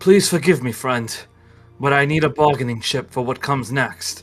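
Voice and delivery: low breathy voice, under the breath. Voicing a character who grabs an ally from behind: low breathy voice. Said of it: "he says in a low breath".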